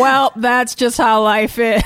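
put-on gloomy voice. Imitating the district attorney's outlook on everything: imitating gloomy Adam Schiff. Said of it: "everything is the worst day of his life".

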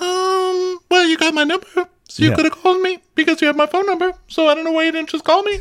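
mock shrill angry octave jump, drawn-out "you". Retelling an argument, the speaker imitates Sheree getting angry, voice jumping an octave. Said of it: "her voice goes into that octave".

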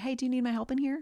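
mock sweet, very high, gentle, kind tone. Describing checking on someone who is escalating, the speaker acts out speaking very kindly. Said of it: "like very kindly say".

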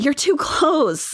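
playful teasing tone. Retelling what a woman said to the man filming her, in a playful tone. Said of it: "she says in a playful tone".

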